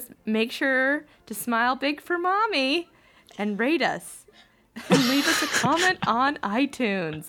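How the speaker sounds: put-on high, eerie, creepy child-actor voice. Asked to read the podcast plug like a creepy child actor: creepy child actor voice. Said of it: "Read it like a creepy child actor".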